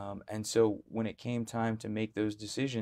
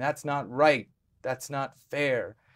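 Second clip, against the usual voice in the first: put-on small child's loud, raised shouted outburst; 4 semitones higher, 6 dB louder than usual. Retelling protesting as a child at a tax commission: imitating own childhood shout. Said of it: "I just started shouting".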